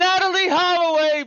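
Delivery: acted-out very high, shrill yell. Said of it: "She was the first one to yell it out".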